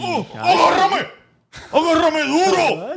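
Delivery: very high, staged, play-acted yell. Showing the others how she shouts, when asked: put-on shouting. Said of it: "Yo grito así, mira".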